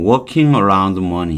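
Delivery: "working" stressed, "money" kept light. Korean lesson explaining stress in 'working around money', stress on 'working'. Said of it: "강세가 이쪽에 있어요. 이 money 쪽이 아니라 working 쪽에 있는데".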